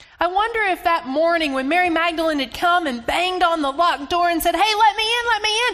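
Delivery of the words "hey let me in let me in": out of breath, frantic, hysterical high shout. Imagining someone banging on the locked door: acting out breathless hysterical shouting. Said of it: "out of breath, hysterical, shouting".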